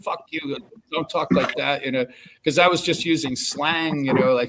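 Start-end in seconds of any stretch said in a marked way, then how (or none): 0.0-1.8 indignant, offended tone. Retelling how a counter worker called the speaker out: imitating an offended woman. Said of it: "called me out".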